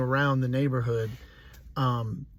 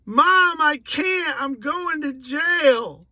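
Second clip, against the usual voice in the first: high-pitched, loud yelling. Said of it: "I'm like".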